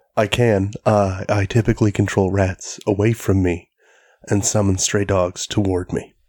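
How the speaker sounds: late-night jazz radio DJ voice. Introduced by the podcast host, the guest replies in a late-night jazz radio voice. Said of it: "I'm trying out my late night jazz radio voice".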